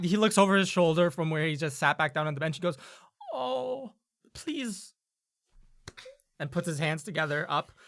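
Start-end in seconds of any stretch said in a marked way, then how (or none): 3.3-4.9 begging, pleading voice pitched way up. Voicing a guard who begs the player character, pleading. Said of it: "looks at you with a pleading expression".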